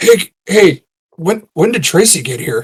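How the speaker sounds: discreet, low-key, sideways aside. In a tabletop game, a player's character goes to his sisters and asks, quietly. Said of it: "he's quietly like".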